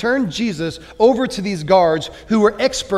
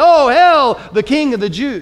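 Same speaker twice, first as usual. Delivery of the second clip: acted, slow, jeering, mocking sham tribute; 5 semitones higher, 6 dB louder than usual. Retelling how they bowed down before Jesus, retelling a jeering mockery. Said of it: "mockingly and jeeringly bow down to him and say".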